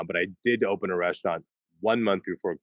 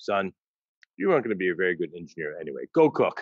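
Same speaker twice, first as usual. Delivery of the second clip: mock flat deadpan delivery. Recalling a father's reaction to a career choice, retelling a deadpan remark. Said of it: "He looks at me, deadpan".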